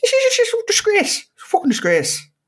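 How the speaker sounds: animated, very high, swooping put-on voice. Imitating a pundit ranting about the players: Roy Keane impression. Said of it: "I will do it".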